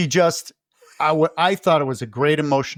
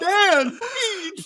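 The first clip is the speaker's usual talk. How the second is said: very high-pitched pleading voice. Imitating a movie character calling to Dan, imitating Stevie Wayne pleading. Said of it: "That's her real voice".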